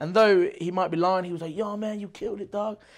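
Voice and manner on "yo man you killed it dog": easy, mellow, unbothered, easygoing, pitched up. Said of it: "that [name] voice, that, like, mellow".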